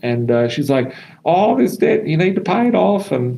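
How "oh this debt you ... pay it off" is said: very high-pitched voice. Quoting what mum said to her, high-pitched voice imitating mum. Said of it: "I was doing the high pitched voice".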